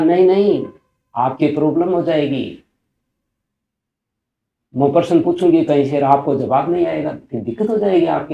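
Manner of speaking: loud, high-pitched, insistent tone.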